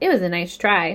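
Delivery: ordinary delivery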